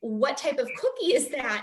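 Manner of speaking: normal talking voice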